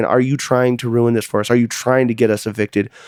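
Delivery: ordinary talk, nothing marked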